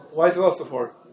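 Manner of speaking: ordinary talk, nothing marked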